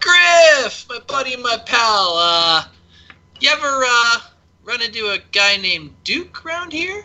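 hearty, jovial, chummy, buddy-buddy calling out. Telling how a man walked Hillman to the bar, retelling a jovial shout. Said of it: "shouts out in a, in a jovial voice".

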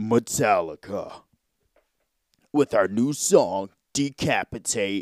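deep, low metal-band announcer voice. Showing how metal bands want their names said, in a deep voice. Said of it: "they have to be said with a deep voice".

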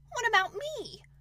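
squeaky, high-pitched voice. Narrator reads Piglet interrupting the writer, in a squeaky Piglet voice. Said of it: "said in a squeaky voice".

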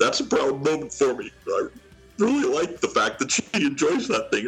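tearful, choked-up voice. A father speaks about his 15-year-old daughter, tearing up. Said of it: "I'm kind of tearing up here a little bit".

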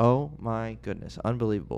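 usual speaking voice

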